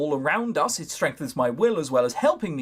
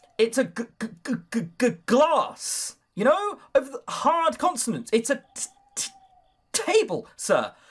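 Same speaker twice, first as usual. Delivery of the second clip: slower put-on stutter on hard consonants; 10 semitones higher than usual. Showing how stuttering really works, stuttering on hard consonants. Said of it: "you choke on hard consonants".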